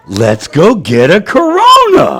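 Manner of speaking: really cute, tempting, swooping, drawn-out voice. Retelling what a woman said when she showed up, in her cute voice. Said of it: "She's got this really cute voice".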